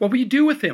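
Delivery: shaking with fear and anger. Turning to face the uncle about the chained Actodin, trembling with fear and anger. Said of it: "my voice trembling with fear and anger".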